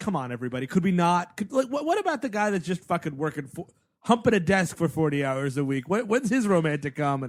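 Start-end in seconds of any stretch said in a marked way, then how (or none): none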